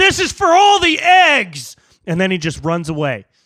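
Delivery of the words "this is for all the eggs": very high, loud yell, "eggs" stretched long. Telling a made-up story, the speaker voices a man attacking the listener: yelling. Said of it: "and he yells".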